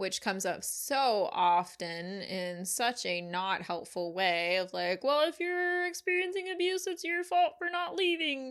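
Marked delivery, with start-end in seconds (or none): 5.0-8.5 pitched way up, puppet-style voice. Voicing the unhelpful blame put on someone experiencing abuse, in a Kermit voice. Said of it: "I said that in Kermit's voice".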